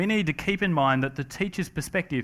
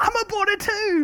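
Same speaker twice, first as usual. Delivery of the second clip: really high-pitched voice, pushed way up. Recalling speaking to a fellow boarder from the same high school, really high-pitched. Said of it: "said to him in this kind of really high-pitched voice".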